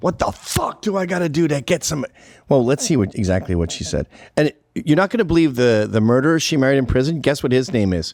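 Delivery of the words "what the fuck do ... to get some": high-pitched screaming outburst. Describing a woman on the House floor, speaker imitates her screaming. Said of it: "She's on the House floor screaming".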